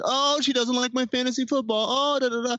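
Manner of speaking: put-on very high, nagging, whiny voice. Imitating a friend's complaints the way friends mock whining, in a mock-whiny voice. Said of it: "the whiny voice that we all adopt".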